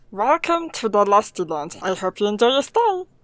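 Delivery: loud, put-on gremlin voice. Asked for a little taste, giving a sample in gremlin voice. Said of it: "little taste of your gremlin voice".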